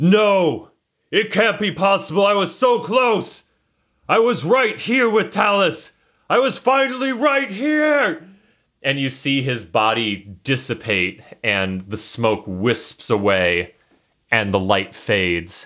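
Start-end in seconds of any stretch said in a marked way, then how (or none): 0.0-8.3 very high, anguished, despairing yell. Voicing a shadowy figure as his plan fails: yelling in despair. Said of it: "and he yells".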